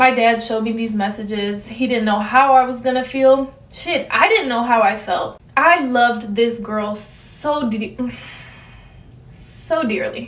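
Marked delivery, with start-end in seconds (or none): 5.6-10.3 slow, emotional, halting, stumbling words, moved. Recalling his dad showing him the messages, the speaker is getting emotional. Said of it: "I'm getting emotional".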